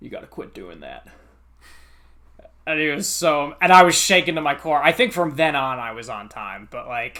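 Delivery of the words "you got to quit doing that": put-on thick, laid-on Texas accent, whispered and breathy. Retelling what a professor said to a late student: thick Texas accent. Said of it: "he had a thick Texas accent".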